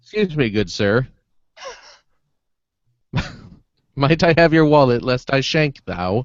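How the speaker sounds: put-on overly polite, courtly, old-world manners. Acting out a peaceful mugging: mock-polite mugger voice. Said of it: "one of those peaceful muggings?".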